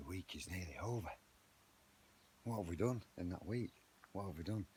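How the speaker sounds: hushed whisper. Early morning in the garden, not wanting to wake the neighbours, whispering. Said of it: "I'm just whispering".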